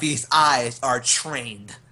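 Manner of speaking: bold, in-character shout projected into the distance. Playing a character with a shotgun, yelling randomly into the distance: yelling in character. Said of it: "I'm just yelling out".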